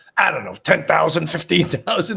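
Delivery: loud, put-on, really raspy voice. Retelling a detective's courtroom testimony, Detective Simmons's raspy voice. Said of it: "He had this real raspy voice".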